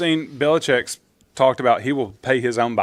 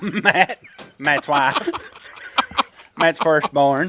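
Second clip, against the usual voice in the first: slow, drawn-out, deliberate character voice; 3 semitones higher than usual. Joining in the joke about sounding like Cotton Hill: Cotton Hill voice. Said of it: "sound like Cotton Hill talking to Hank".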